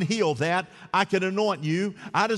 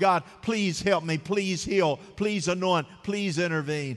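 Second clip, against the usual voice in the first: put-on, mock crying out. Speaker acts out how a listener prays when life changes, acting out crying out to God. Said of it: "you're crying out".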